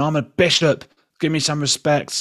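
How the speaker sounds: put-on, high, shrieking scream, insistent tone. Retelling what the bishop screamed at David: imitating someone screaming. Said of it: "He screams at David, and he's going".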